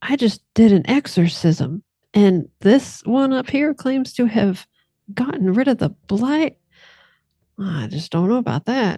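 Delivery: voice dropped low. Speaker imitates what a woman says, in her lowered voice. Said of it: "she'll kind of lower her voice and she'll say".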